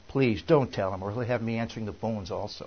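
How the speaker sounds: ordinary talk, nothing marked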